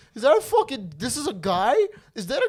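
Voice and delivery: stunned, very high, swooping, squealing disbelief. Retelling what a wife on a TV show said: imitating a shocked woman. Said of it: "she was so shocked".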